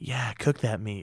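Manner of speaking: put-on ASMR whispering. Retelling old cooking videos made as bad asmr: imitating own asmr whisper. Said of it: "I'm gonna whisper in the mic".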